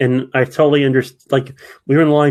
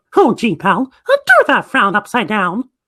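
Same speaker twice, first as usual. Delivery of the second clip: bright, bouncing cheerful voice; 9 semitones higher than usual. Describing greeting guests who looked like they had a bad day: Mickey Mouse voice. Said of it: "I like doing the voice of uh".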